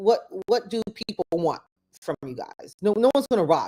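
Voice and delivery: ordinary talk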